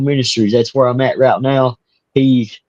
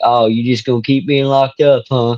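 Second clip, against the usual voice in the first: plain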